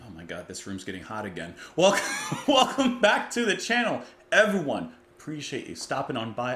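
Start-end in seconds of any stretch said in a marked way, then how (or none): 1.8-4.9 loud, high-pitched, almost shouting near-yell. Welcoming viewers back to the channel: loud, nearly yelling. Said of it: "I apologize for being so loud".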